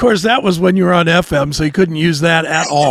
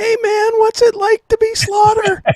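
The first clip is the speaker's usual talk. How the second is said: voice pushed very high in pitch. Recalling being very green, the speaker retells his early question in a high voice. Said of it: "the high voice?".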